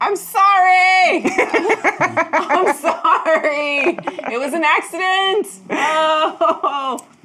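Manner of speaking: very high, very slow, drawn-out yelling. Acting out a character's reaction during a game scene: yelling. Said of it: "I just start yelling".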